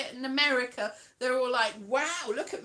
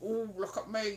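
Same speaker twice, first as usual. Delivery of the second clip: cheeky put-on northern English accent; 4 semitones lower, 6 dB quieter than usual. Trying to do a northern accent and failing, attempted northern accent. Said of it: "except northern".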